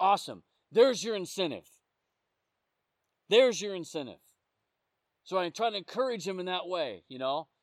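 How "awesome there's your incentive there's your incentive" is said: normal talking voice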